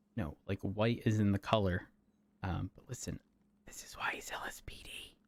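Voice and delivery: hushed whisper. Speaker whispers to the listener so another person won't hear: whispering. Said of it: "I want to whisper to you so he doesn't hear me".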